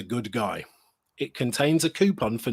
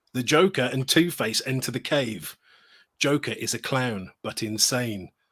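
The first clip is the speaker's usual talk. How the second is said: plain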